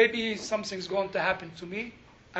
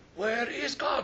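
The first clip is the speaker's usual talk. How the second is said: mock harsh, demanding, interrogating tone; 3 semitones higher, 3 dB quieter than usual. Storyteller acts out a man questioning a frightened boy: harsh voice. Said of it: "with a harsh voice".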